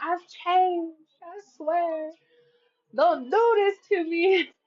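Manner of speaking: put-on drunk mumbling. Acting out what someone might say while drunk: imitating a drunk person. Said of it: "they're all fucked up and drunk".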